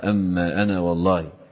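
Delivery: ordinary talk, nothing marked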